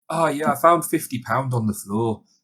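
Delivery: put-on gloomy, sad-sounding local accent. Acting out a dialogue in a dialect that sounds depressing: mock-sad, depressing dialect. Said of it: "he just sounded like really sad all the time".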